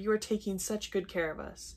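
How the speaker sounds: ordinary delivery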